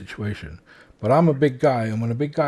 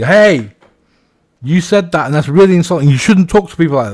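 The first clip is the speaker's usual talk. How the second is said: very loud, combative, aggressive tone; 6 semitones higher, 11 dB louder than usual. Explaining how not to confront someone, showing the aggressive way: aggressive. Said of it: "if I come up to them aggressively".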